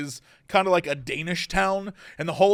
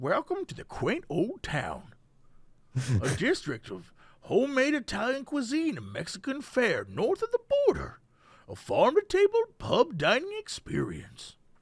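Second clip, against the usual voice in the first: put-on hushed, sing-song, old-timey cowboy voice; 6 semitones higher, 7 dB quieter than usual. Reading an Old Town Temecula description aloud, in an old-timey cowboy voice. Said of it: "I get you're trying to read it like an old timey cowboy".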